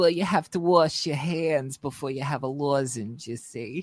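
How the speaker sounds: put-on posh, prim and proper lady voice. Doing the character voice they call the lozenge lady: lozenge lady voice. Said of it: "We call that the lozenge lady".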